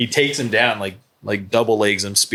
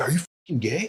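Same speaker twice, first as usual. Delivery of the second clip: mock, super outraged, high and hushed; 5 semitones higher, 7 dB quieter than usual. Speaker retells a man's reaction to him at a bar, mock-outraged question. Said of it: "got super like outraged".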